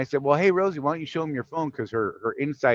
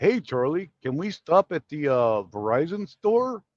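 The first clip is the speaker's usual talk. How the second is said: put-on goofy kids' TV dinosaur. Co-host quoting Jeff asking to stop at a store, Barney voice. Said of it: "my attempt at a Barney voice".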